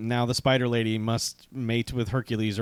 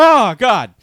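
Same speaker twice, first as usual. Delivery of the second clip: very high, very loud, shrill dying cry; 12 semitones higher, 14 dB louder than usual. Retelling a movie scene where the hero hits the ground: imitating a man acting shot. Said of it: "acts like he has just been shot".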